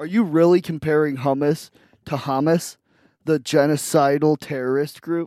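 ordinary delivery

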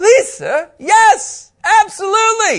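eager, very high, loud begging tone.

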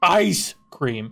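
"ice" in "ice cream" stressed hard, "cream" light. Describing how others say ice cream, stress on ice in ice cream. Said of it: "they put more emphasis on the ice".

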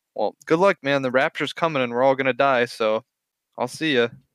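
deadpan, casual, matter-of-fact delivery. Retelling what a stranger said as he was about to leave: imitating a matter-of-fact tone. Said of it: "as if, like, it was a matter of fact".

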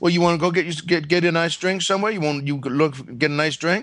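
put-on Louisiana Cajun accent. Retelling what a man said one night, in Cajun accent. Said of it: "they all had that Cajun accent".

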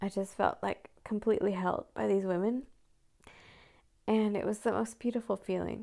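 tearful, on the verge of crying. Mother describing how other moms held her up: tearful. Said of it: "I have to have some tears come now".

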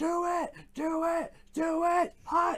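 very high, very slow, drawn-out scream. Explaining a football play, the speaker retells the call screamed as the team lines up. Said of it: "and he just screams".

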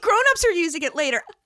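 mock yelling. Retelling how she yelled at the screen in an interview: imitating someone yelling. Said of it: "yelling at the screen".

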